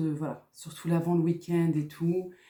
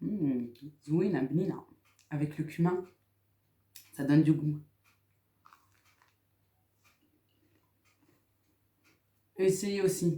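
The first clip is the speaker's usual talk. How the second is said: talking with mouth full. Tasting breakfast and recommending it, talking with mouth full. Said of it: "je parle la bouche. Bouche pleine".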